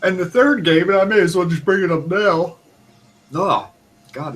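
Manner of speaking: words stretched by a yawn. Chatting with another speaker about video games late in the evening, yawning while talking. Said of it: "it's only ten o'clock and I'm yawning".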